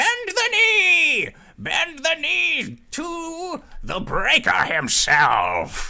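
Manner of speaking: very high, sing-song, swooping bird-creature voices. Voicing bird-folk who order the crew to kneel: avian folk voices. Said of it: "you hear the voices of these other avian folk say".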